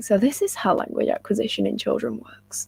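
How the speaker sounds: whispered, quiet voice.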